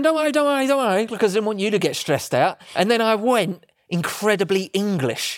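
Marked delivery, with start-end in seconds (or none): 0.0-1.0 high, urgent, panicked reassuring tone. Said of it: "And I was going".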